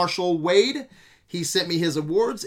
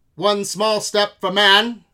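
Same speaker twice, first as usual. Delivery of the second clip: loud, crackly, staticky radio transmission voice; 2 semitones higher, 5 dB louder than usual. Opening a podcast with an old-timey moon bit, in a crackly radio static voice. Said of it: "Gotta have that static effect there".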